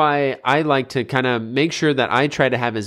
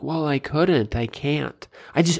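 put-on defensive, excuse-making child voice; 4 dB quieter than usual. Mimicking an excuse that kids would make: imitating kids making excuses. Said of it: "an excuse my kids would make".

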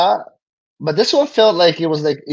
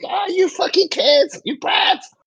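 very high squealed delivery. Predicting the final back-and-forth showdown, imitating Big Mom screaming at the kids. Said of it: "Big Mom's gonna be screaming".

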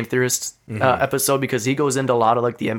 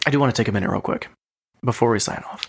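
exaggerated, laid-on put-on sexy voice; 3 semitones lower than usual. Podcast host addressing listeners before signing off, in a mock sexy voice. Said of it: "You're getting all sexy with".

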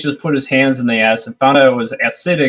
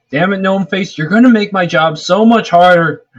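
griping, exclamatory character voice, pitched up; 5 semitones higher than usual. In a game scene, a character yells at a companion who is acting: in-character shout. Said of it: "I need to shout one thing".

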